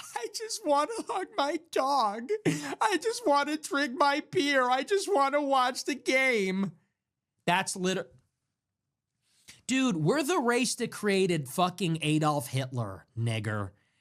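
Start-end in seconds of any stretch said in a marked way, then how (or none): 0.0-6.7 very high voice, on the verge of tears. Retelling a man on stage with his guitar: imitating someone about to cry. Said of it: "he's up there sounding like he's gonna cry".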